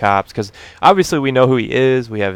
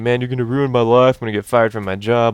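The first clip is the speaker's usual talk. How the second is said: put-on tearful crying voice. Retelling what a crying, upset man said: imitating someone crying. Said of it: "But he's crying, he's upset".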